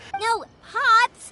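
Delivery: loud, slow, high-pitched voice.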